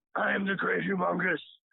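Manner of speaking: rough-edged, creaky villain warlord voice. Trying out voices, speaker does the Humungus from The Road Warrior. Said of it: "I was trying like uh the great humongous from the Road Warrior. The guy who's like".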